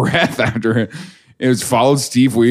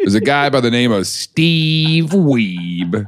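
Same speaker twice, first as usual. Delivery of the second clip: teasing, mocking, drawn-out delivery. Repeating the other speaker's line: imitating a mocking delivery. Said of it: "You said it like we're supposed to make fun of him".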